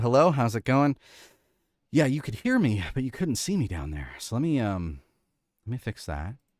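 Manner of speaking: slightly out of breath. Speaker back on a live session after running up the stairs, a little winded. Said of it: "a little winded".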